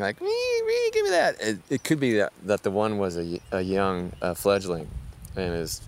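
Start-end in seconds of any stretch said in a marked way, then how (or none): 0.2-1.4 very high-pitched, whining bird voice. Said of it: "they were kinda whining".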